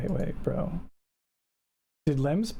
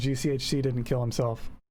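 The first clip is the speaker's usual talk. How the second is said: ordinary talk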